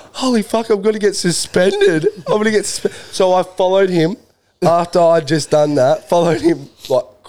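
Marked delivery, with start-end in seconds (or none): 0.1-2.9 put-on, frantic, high-pitched, tearful panicked crying. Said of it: "and I've started crying".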